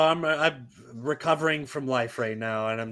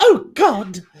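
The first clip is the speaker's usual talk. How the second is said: fussy put-on robot butler voice, higher and louder; 11 semitones higher, 11 dB louder than usual. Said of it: "C three P O narrating and being like".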